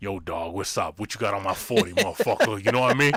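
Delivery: very low, street-tough gangster-ghost voice. Imagining a ghost that haunts him: OG gangster ghost voice. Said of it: "no triple O G ghosts".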